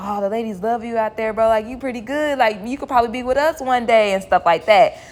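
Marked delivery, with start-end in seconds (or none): 0.0-3.9 energetic, pumped-up encouragement. Retelling how a dancer talked to a newbie: imitating someone hyping a guy up. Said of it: "amping him up".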